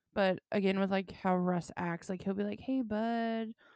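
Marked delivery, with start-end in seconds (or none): 2.5-3.5 charming voice, put on. Retelling how Russ greets people: imitating Russ's charming voice. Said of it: "the way he talks to you, he's so charming".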